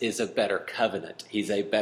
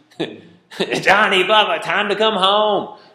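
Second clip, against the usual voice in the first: scream, higher and louder; 10 semitones higher, 10 dB louder than usual. Retelling how Mom called the kids home from the back porch: imitating Mom screaming. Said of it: "Mom just got on the back porch and screamed".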